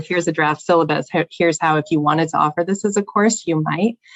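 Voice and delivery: ordinary talk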